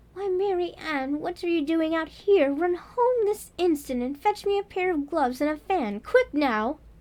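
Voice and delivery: high, angry, commanding, bossy voice.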